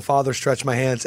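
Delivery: ordinary talk, nothing marked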